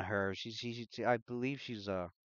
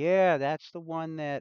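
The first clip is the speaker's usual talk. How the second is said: put-on high, raised young teenage boy character voice; 6 semitones higher, 5 dB louder than usual. Game master voicing a guy in the back who points someone out, young teenage boy voice. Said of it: "sounds like a young teenager".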